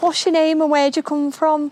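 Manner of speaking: put-on soft Scouse accent. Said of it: "it's a soft Scouse".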